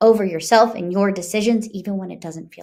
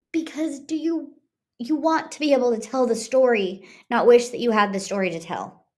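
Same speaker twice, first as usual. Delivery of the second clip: tearful voice, on the verge of crying; 4 semitones higher than usual. Speaker tells listeners what they hope for them, on the verge of tears. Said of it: "Sorry, I'm going to cry".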